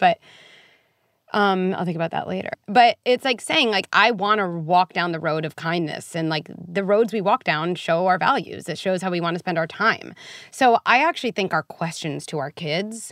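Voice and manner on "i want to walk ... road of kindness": plain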